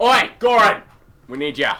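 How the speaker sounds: very loud, very high-pitched yell. In a tabletop game, a character calls out to goran, shouting. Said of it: "I shout".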